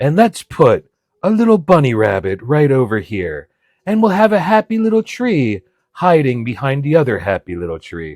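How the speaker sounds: put-on soothing ASMR painter voice. Imitating the painter from a half-hour painting show: mock hushed ASMR voice. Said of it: "a hushed voice about happy little clouds".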